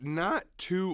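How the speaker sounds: cracking voice. Giving a recap of last week's results: voice crack. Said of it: "voice crack".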